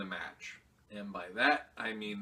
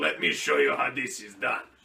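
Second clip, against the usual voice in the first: very loud, belted-out put-on Russian accent; 3 semitones higher, 9 dB louder than usual. Imagining what Asuka would say in the ring, in a put-on Russian accent. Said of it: "she would throw on a Russian accent and she'd be like".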